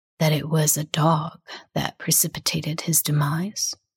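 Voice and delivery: deep, soft voice. Narrator reads a man's line to madame after he pauses, in a lower voice. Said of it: "he says in a lower voice".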